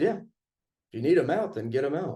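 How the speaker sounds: plain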